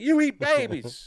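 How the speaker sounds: shrill, loud, very high accusing cry. Retelling a game scene, imitating Bigfoot accusing the player. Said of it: "He's like".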